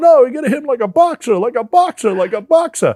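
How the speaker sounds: very high, loud, thick put-on heavy Italian accent. Retelling what a man kept telling him to do, in a heavy italian accent. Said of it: "really heavy Italian accent".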